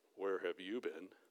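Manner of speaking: very low, condescending, talking-down voice. Speaker showing how not to say something to someone, in a condescending tone. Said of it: "speaking it in condescending tones".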